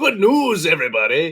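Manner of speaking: booming, very loud, at the top of the lungs. Opening the episode, then sounding like the professor. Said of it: "Fucking sound like the professor".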